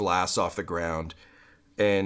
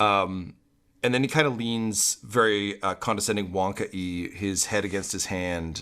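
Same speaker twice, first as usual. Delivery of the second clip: usual speaking voice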